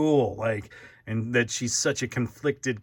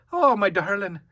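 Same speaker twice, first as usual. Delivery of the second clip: Scottish accent, woman's voice; 9 semitones higher, 4 dB louder than usual. Trying out accents for a female character's voice, Mrs. Doubtfire voice. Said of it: "Now she sounds like Mrs".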